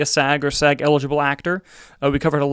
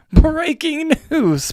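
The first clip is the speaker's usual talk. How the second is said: very high-pitched cartoonish character voice; 13 semitones higher than usual. Streamer announces breaking news from a slideshow, in a SpongeBob voice. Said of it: "SpongeBob voice".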